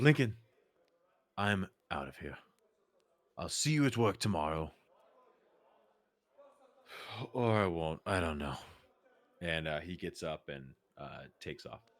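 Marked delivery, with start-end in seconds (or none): 0.0-8.6 mock slurring drunk voice. Voicing a drunk character who refuses a babysitter: voicing drunk Heldar. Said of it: "he looks over and he goes".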